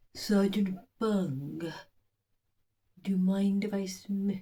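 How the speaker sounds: husky edge on every word, put-on voice. Quoting Fenella Fielding's line as Valeria, Fenella Fielding husky voice. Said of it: "That's how she sounded. Quite, she had a beautiful husky voice".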